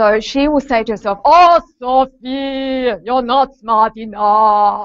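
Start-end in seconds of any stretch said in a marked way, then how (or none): 1.3-4.9 very slow silly voice, words stretched long. Explaining a colleague's self-talk technique, doing an Arnold Schwarzenegger impression. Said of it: "She tries to impersonate Arnold Schwarzenegger".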